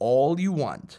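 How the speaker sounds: ordinary delivery, nothing marked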